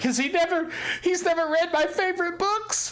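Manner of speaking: words through crying, pitched very high. Voicing a shopkeeper's child character who starts crying: crying while talking. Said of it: "And Timmy actually starts crying".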